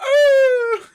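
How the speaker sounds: very high, loud dog whine.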